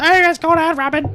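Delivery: very high, loud put-on male voice.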